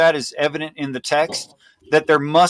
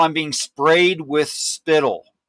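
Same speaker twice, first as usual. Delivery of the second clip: normal talking voice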